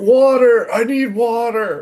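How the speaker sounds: called out in a yelled cry. Retelling what a guy suddenly shouted, imitating him yelling out. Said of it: "you just hear him yell out".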